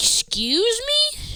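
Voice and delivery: very high, slow, indignant "excuse me".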